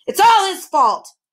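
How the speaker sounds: furious loud voice. A magician, his sadness turned to fury, stalks about the room, furious. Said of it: "his sadness had changed to fury".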